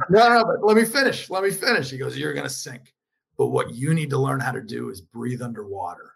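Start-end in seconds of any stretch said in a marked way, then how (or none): 2.2-6.0 mock-gruff voice, lower, quieter, faster. Retelling a day-one pep talk from a man with a gruff voice, imitating it. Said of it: "he's got this gruff voice".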